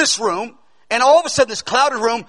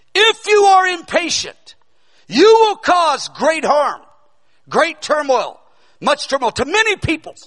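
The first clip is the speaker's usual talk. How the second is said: stern, high-pitched, commanding voice; 5 semitones higher than usual. Recounting a voice that came while he stared, confused and in pain: retelling the Lord's voice, louder, sterner. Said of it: "it's louder, it's sterner".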